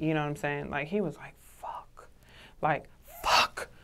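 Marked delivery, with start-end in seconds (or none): 1.6-3.6 muttered under breath, lower and much slower. Retelling how he cursed to himself as the room heard: retelling a muttered curse. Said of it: "Under his breath".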